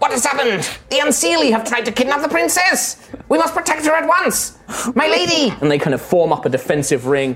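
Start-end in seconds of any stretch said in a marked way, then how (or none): 0.0-5.5 squeaky, high-pitched tiny warrior voice. Narrator voicing the tiny warriors, in a high-pitched tiny warrior voice. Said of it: "you hear in that kind of high-pitched voice".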